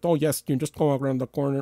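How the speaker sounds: put-on Mexican accent. Quoting a bar worker answering a tourist, in a Mexican accent. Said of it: "speaks to me in a Mexican accent".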